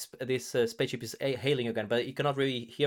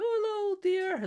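put-on little old lady voice, very high. Retelling a game encounter where a spaceship hails: imitating an old lady. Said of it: "like an old lady talking".

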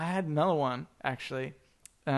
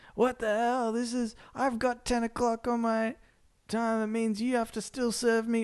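put-on high, angry, irate yelling; 8 semitones higher than usual. Retelling a drive-thru customer yelling at the manager: imitating a customer yelling. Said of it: "start yelling at the manager".

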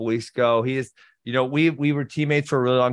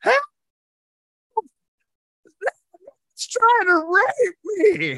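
put-on funny yell, much higher and slower. Retelling a man shouting at a bus stop, retelling a yell in a funny voice. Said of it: "goes in this really funny voice".

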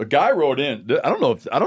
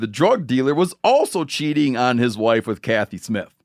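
usual speaking voice

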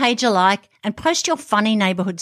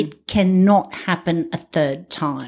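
ordinary talk

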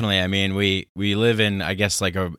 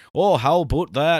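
horrible fake goofy Canadian accent; 8 semitones higher than usual. Speaker showing how Americans make fun of Canadians, bad goofy Canadian accent. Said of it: "Anytime I do a Canadian".

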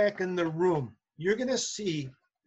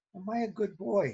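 slow, mock dead-earnest, heartfelt, sincere tone; 2 semitones higher than usual. Retelling a kid asking a passing teacher: imitating a kid's sincere voice. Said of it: "Just like in the most sincere voice".

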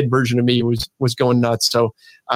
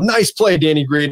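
mock, light, half-called yell; 3 semitones higher than usual. Retelling yelling at the TV the other night: imitating own yell. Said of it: "I yelled".

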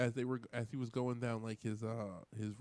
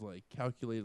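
ordinary talk, nothing marked

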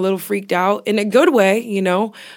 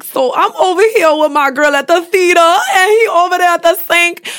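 put-on high-pitched, loud New Orleans accent; 9 semitones higher, 7 dB louder than usual. Retelling girls on YouTube vlogs, imitating a New Orleans accent. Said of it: "watching them be like".

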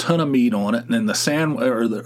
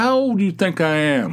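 high-pitched, put-on, insistent and demanding tone; 6 semitones higher than usual. Retelling pressing a panicked woman for an answer: retelling a demanding question. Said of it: "I was like demanding an answer".

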